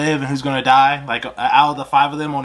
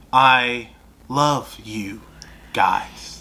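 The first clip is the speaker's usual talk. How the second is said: put-on old-school robot voice, lower; 3 semitones lower than usual. Describing an audiobook, speaker imitates its old-school robot voice. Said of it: "that old school robot bo- voice that goes".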